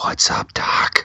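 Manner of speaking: very quiet, close, breathy whisper. Pitching a creepy scene, saying the line real quiet in his ear. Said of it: "real quiet, like, in his ear".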